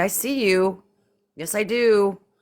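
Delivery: high, drawn-out, playful teasing through giggles. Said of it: "And I started giggling".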